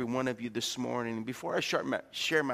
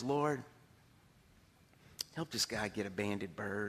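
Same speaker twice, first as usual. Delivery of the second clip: mock mutter under breath, lower and quieter; 5 semitones lower, 7 dB quieter than usual. Retelling a man praying for the guy on his hunt: retelling a prayer under his breath. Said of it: "under his breath".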